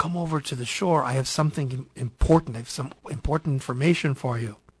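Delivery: plain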